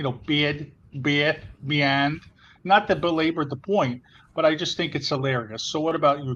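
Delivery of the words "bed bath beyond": thick-sounding Chicago pronunciation played for comic effect. Joking about how a store name sounds, Chicago accent. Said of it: "when I say Bed Bath and Beyond in my Chicago accent".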